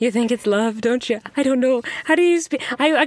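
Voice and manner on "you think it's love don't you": put-on Liverpool accent. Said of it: "That was your Liverpool accent".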